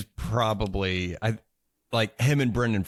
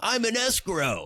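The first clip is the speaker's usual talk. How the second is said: excited yell, higher; 14 semitones higher than usual. Retelling a scene where an excited character keeps yelling: imitating a character yelling. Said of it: "he just keeps yelling".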